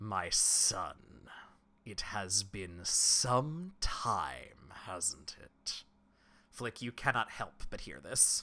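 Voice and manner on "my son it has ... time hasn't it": very slow, deliberate, demonic, fiendish voice. Game master voicing the pit fiend as its voice rings out again: booming pit fiend voice. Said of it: "the pit fiend's voice booms out again".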